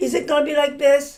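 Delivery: mock careless, hot-tempered, angry snap. Retelling a husband snapping at his new wife: imitating an angry snap. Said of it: "And he snapped".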